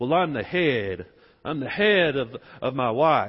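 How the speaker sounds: slow, drawn-out southern drawl. Imitating guys who say they are the head of their wife: southern accent. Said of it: "speaking with my southern accent".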